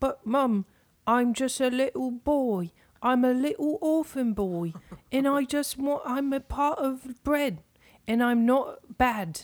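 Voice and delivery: put-on high, weepy, tearful little boy pleading. Acting out gluten as a little orphan boy on the stoop: weeping little child. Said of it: "Gluten's the little child sitting out on your stoop, weeping".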